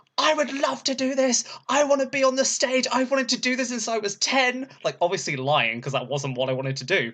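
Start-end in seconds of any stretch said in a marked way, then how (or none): 0.2-4.7 put-on shout at a very high pitch. Retelling running up to the compere: imitating own past shouting. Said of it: "basically shouted at her".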